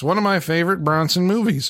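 plain

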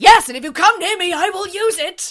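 very high, shrill, loud yell. Retelling a threat from a man holding a shotgun: imitating someone shouting. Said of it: "And Charles shouts".

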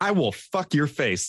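mock sassy scolding. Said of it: "she's getting sassy with it".

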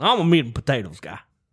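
very loud, booming, not-quite Southern accent. Asked to say the line one more time, in an attempted Southern accent. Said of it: "That didn't even sound southern enough".

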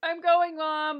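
loud, high-pitched yelling. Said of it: "they're yelling at each other from different rooms".

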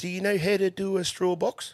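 put-on high old New Zealand fella accent. Telling a story, the speaker quotes Graham's question in a Kiwi accent. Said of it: "We're going to do an accent now".

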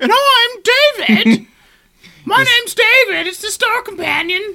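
mock-crazy high, loud voice. Imagining running the show alone, voicing both hosts: put-on crazy voice as David. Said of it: "I would go full fucking crazy".

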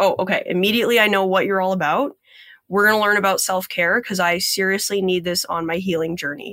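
ordinary talk

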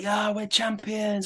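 put-on high yell. Retelling celebrating on a video call to his wife: imitating own yell. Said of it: "I'm there yelling".

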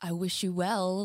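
put-on sinister delivery. Retelling how a line is supposedly meant: imitating a sinister tone. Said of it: "a sinister".

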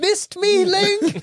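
very high, weird-sounding voice. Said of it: "She just speaks in a really weird way".

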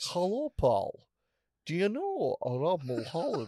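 put-on poshed-up, army-polished, refined Edinburgh accent. Retelling what a man from Edinburgh said to him, posh Edinburgh accent. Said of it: "it's an Edinburgh accent that was in the army in England for ages, so it's been poshened up".

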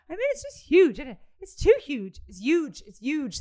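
put-on convincing, animated, high, sing-song Irish accent. Describing a podcast they listen to, quoting its hosts in an Irish accent. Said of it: "That's not a bad accent".

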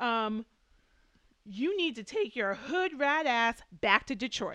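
loud, hollered scream. Speaker retells a woman screaming across the lanai, retelling a scream. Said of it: "she then screams across".

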